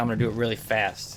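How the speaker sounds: ordinary delivery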